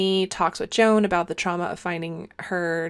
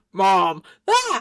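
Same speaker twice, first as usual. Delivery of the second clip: put-on loud, new man voice of a teenager; 5 dB louder than usual. Retelling a teenager waking a parent late at night: imitating teenager's man voice. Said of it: "he has a man voice now".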